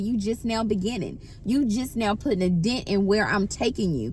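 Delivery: ordinary talk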